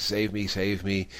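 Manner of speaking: ordinary talk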